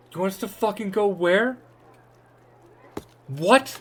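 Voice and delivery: very high, loud, furious shout. Voicing a townsperson who shouts from the back of a crowd: angry shout from the crowd. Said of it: "someone just fully shout from the back".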